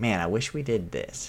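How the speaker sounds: plain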